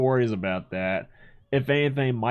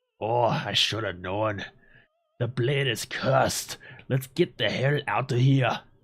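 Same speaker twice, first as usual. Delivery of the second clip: put-on Scottish dwarf accent. Voicing a dwarf's cutscene line while playing, Muradin Bronzebeard Scottish accent. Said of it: "I somehow went from Scottish to Schwarzenegger".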